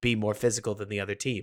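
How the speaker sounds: usual speaking voice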